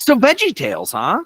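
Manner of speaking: shrill, very loud, very high-pitched yell. Starting the discussion of this week's episode with another speaker, yelling. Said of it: "Why are you yelling?".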